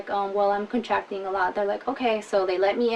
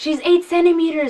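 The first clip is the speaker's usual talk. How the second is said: crazy, loud, high yelling; 8 semitones higher, 8 dB louder than usual. Retelling what a woman checking her dilation yelled out, imitating someone yelling. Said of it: "she yells like crazy".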